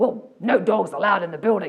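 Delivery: loud, gruff voice. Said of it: "this guy gruffed out going".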